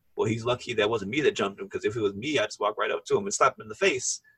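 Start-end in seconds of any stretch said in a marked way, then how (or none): none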